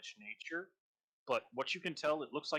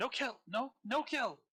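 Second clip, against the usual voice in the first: piercing, panicked, very shrill, high, drawn-out cry; 11 semitones higher than usual. A wounded, cowering creature answers a demand to surrender, very shrill voice. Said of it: "calling out in a very shrill voice".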